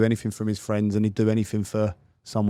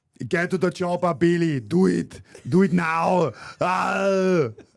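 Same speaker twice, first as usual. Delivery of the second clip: very slow, high action-hero voice, every word dragged, stretched "oh"; 9 semitones higher than usual. Repeating the Arnold Schwarzenegger impression when asked again. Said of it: "Do that again".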